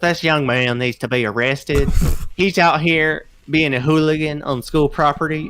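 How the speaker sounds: put-on Southern accent. Retelling a woman demanding a young man's arrest: imitating a southern accent. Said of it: "she says it in Southern language".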